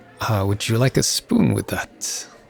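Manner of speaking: usual speaking voice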